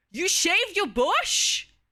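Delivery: shrill, very loud, very high shrieking disbelief. Acting out an emotion prompt for chat, shocked. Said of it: "we got we got shocked".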